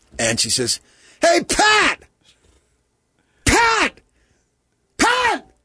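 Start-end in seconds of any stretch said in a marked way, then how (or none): 1.2-5.4 high, loud scream. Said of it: "screams across the opposite end".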